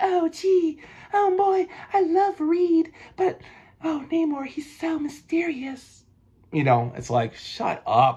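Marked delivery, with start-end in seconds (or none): 0.0-6.0 very high, breathy starlet voice. Acting out what she says, in a Marilyn Monroe voice. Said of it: "she like does this Marilyn Monroe kind of. That's how I, I heard it in my voice".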